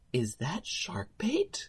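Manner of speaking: tiny, hushed, soft little whisper. Speaker retells someone recognizing them while walking away, imitating a soft little whisper. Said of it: "I heard this soft little voice whisper to himself".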